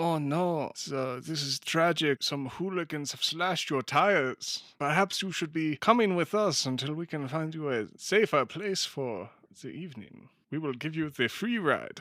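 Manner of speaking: put-on mixed German-Indian accent. The blonde-haired agent character speaks in a stereotypical mixed foreign accent. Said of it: "I love his accent".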